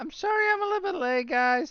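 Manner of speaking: squeaky, squealy, very high little voice. Apologizing to the group for joining late, squeaky high voice. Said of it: "Can you squeak any higher there".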